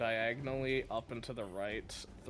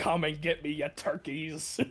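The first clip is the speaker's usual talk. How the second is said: yelled taunting, much higher; 4 semitones higher than usual. Playing a character in a game, waving a standard, yelling a taunt into the room. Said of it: "I'm going to yell out into the room".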